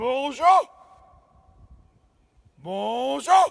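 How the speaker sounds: bigfoot call belted up from the diaphragm. A big guy with strong lungs demonstrates a Squatch voice from the diaphragm. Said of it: "I'm going to bring it from the diaphragm".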